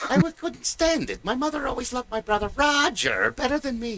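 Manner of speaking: put-on high-pitched, heavy German accent. Comparing accents with another speaker, quoting Doofenshmirtz in a German accent. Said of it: "Paul Frees doing the German accent".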